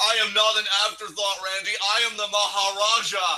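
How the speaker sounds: dead-level robot voice. As Jinder comes out, answer Randy in an intentionally robotic Jinder impression. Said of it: "you're being as intentionally robotic as possible".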